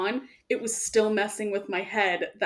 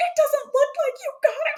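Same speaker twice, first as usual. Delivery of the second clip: very high, panicky, freaked-out disbelieving voice; 4 dB louder than usual. Telling a story, replaying the speaker's answer to Josh, retelling freaking out. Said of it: "I'm just like freaking out".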